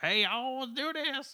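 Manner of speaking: very high, loud, hollered yee-haw voice. Discussing how game characters sound, the speaker imitates Cannibal's yee-haw voice. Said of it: "Cannibal has the yee-haw".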